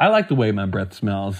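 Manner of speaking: cheerful, happy, affectionate, loving tone. Retelling a bartender-side exchange, imitating a happy loving reply. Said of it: "with a very happy, fun, uh, loving, uh, beautiful face".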